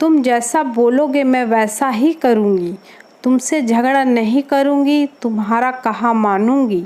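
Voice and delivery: ordinary talk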